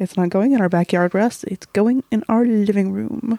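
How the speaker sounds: know-it-all clever dad voice. Retelling a movie scene where the dad answers his son: Chevy Chase impression. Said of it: "you did a great Chevy Chase impression".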